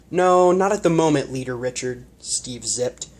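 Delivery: plain reading voice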